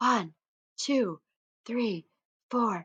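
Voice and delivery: whispered speech. Showing learners the counting game, whispering the finger counts. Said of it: "count all of the fingers in a whisper".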